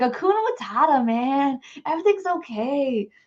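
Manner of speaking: laid-back, slow stoned surfer voice, drawn-out okay. Imitating how intuition sounds, high and relaxed: stoned surfer voice. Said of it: "It sounds like it's high".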